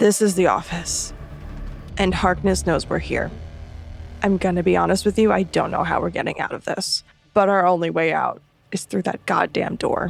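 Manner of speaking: hushed, really quiet, low murmur. A character turns back to the group and speaks, really quiet, low voice. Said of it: "just says really quietly in a low voice".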